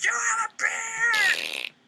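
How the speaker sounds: play-acted very high, slow, swooping child's shout. Imagining a kid yelling at someone doing their job: imitating a kid yelling. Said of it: "some kid yells at you".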